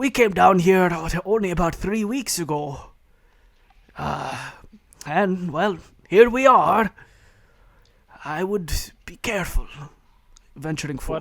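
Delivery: high, loud ghostly voices speaking in near-unison. Voicing ghost dwarves speaking almost in unison: ghost dwarves speaking in unison. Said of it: "they speak in almost unison".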